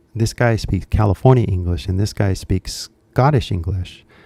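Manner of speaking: usual speaking voice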